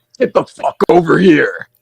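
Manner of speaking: high, drawn-out, slowly stretched catchphrase. Doing a requested impression of the Get over here line, imitating Ed Boon. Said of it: "I'll do a variation. Uh, that Ed Boon did".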